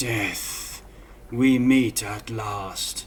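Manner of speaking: low, very slow half-whisper. Describing an enemy in a tabletop game, giant half-whispering to himself. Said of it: "you see this guy whisper to himself".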